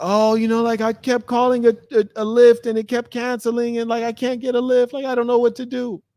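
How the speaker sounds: acted-out, weepy, very high-pitched, tearful crying voice. Retelling a woman's message about a ride that kept canceling, imitating someone crying. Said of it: "teared up, crying, like".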